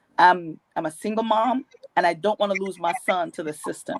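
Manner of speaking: ordinary delivery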